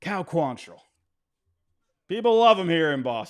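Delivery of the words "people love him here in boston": sarcastic, raised pitch and volume. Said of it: "I'm being sarcastic".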